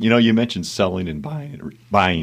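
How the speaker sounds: voice cracking, breaking on a word. Responding after a real estate ad read, the speaker talks as their voice cracks. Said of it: "my voice cracked".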